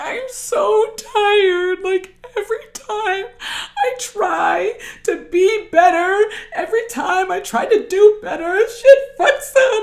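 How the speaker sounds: mock weepy, worn-out sob, very high, slow. The speaker recalls lying in their car, retelling their own crying. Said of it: "I'm just laid out in my car and I'm just crying".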